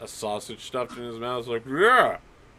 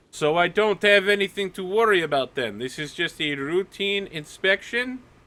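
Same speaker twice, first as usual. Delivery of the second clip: very loud, high, projected voice; 7 semitones higher than usual. Retelling how Nadia answered a man ordering her out for an inspection, in a very loud voice. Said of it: "in a very loud voice".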